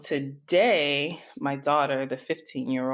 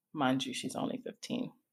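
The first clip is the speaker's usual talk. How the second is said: plain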